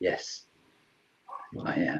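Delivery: low, soft, calming devil voice.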